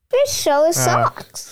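put-on big woman's accent, very high pitch.

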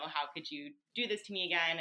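imitated sobbing in a tearful voice. Reminding him what she said to him last night, retelling her own crying. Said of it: "But then also like crying and saying".

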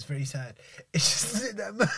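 soft voice, giggling and laughing through the words. A speaker apologizing to babe for laughing, laughing while talking. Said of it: "I'm still laughing at my tears".

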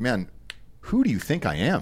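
ordinary delivery

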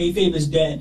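play-acted dry, level, expressionless deadpan. Retelling a woman's remark to him, imitating her deadpan delivery. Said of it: "she deadpanned and went".

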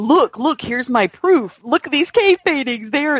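delighted, proud voice. Retelling what John said about his proof, imitating John sounding happy. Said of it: "he almost sounded so, you know, so happy".

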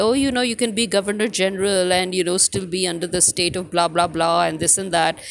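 ordinary talk

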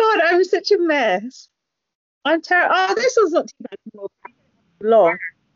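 tearful, high-pitched voice crying through the words. Speaker reacts to an emotional message and starts crying. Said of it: "I'm crying now".

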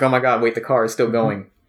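ordinary talk

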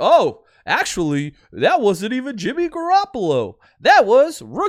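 loud, drawn-out put-on sportscaster announcer voice. Explaining what the game's announcers will say, in a fake announcer voice. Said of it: "my fake guy announcer voice".

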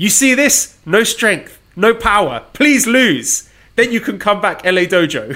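mock shouting, loud and high-pitched. Reading a column aloud, quoting the trainer's words: imitating Shibata shouting. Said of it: "grabs my belly fat and shouts".

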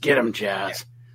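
deep, rough wrestler delivery. Retelling a wrestling show, quoting Glenn Osborne in his gravelly indie wrestler voice. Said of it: "in his gravelly indie wrestler voice".

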